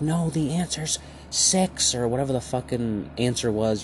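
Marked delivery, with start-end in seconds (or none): 0.0-1.9 put-on high, drawn-out, freaked-out yell. Retelling a frustrated parent's outburst over a math problem: imitating a parent yelling. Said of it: "started yelling".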